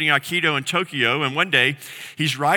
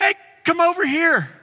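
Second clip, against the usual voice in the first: put-on bright, friendly, cheery voice, pitched up; 14 semitones higher, 3 dB louder than usual. Retelling a passenger calling the drunk man over, mimicking a cheery, happy voice. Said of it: "in like this cheery, happy voice".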